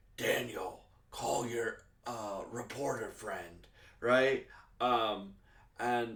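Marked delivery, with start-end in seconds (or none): 0.2-3.7 put-on extremely angry voice. Retelling a scene from the episode: imitating extremely angry Fisk. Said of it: "Fisk being extremely angry".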